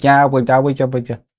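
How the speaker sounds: put-on babyish baby-talk babble like a toddler. Mocking how someone talks while watching a stream: Harley Morenstein talking like a baby. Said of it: "he actually talks like a baby".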